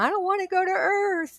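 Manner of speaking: put-on very high, tearful, crying wail. Recounting a vision of space and earth, the speaker retells crying. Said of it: "I was crying and I was saying".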